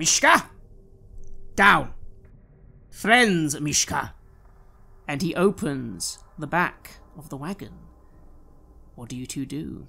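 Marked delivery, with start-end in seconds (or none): 0.0-4.1 very loud, barked, forceful shout. A narrator voices a man calling to mishka while opening a wagon, very loud commanding shout. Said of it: "You hear him say very loudly".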